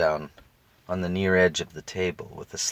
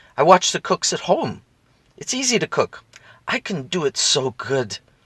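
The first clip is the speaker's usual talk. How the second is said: very high, near-fierce swooping, insistent voice; 9 semitones higher, 5 dB louder than usual. Reading a story aloud, a child answers her uncle: almost fiercely. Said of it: "spoke out almost fiercely".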